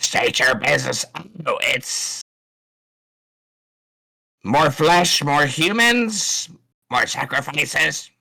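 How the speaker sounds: shrill, high-pitched screeching creature voice. Voicing a strange vulture-humanoid creature calling down: high-pitched screeching creature. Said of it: "screeching down in a high pitched".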